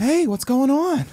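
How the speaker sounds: very high-pitched, slow, drawn-out voice. Doing an impression in an impression contest: Mark Wahlberg impression. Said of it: "Do Mark Wahlberg".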